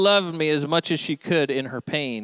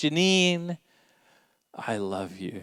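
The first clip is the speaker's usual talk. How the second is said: acted soft, heartfelt voice trembling with passion; 5 dB quieter than usual. Recalling what he told her soon after their first kiss, retelling a quivering, passionate declaration. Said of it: "with heartfelt passion and in a quivering voice".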